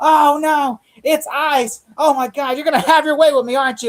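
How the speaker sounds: very high, slow, drawn-out put-on cartoon voice. Acting out a character in a shower scene the speaker is recounting, doing an impression of a cartoon teacher. Cartoon character voice. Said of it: "it's like mister Garrison from South Park".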